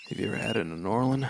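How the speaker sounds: creepy, heavy-breathing character voice. Doing a new character with heavy breathing: creepy heavy-breathing character voice. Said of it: "Don't do that thing with your mouth".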